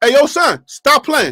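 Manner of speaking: very confident, self-assured, New York accent. Showing how New Yorkers tell someone off, said very confident. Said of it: "say it in a very confident way".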